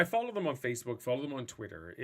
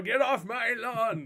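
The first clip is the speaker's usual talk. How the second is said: put-on high, slow old man voice. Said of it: "you're such an old man".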